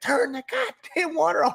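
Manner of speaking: play-acted, very high, furious scream. Retelling a father-in-law's order as water sprays: imitating someone screaming. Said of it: "he's screaming at me".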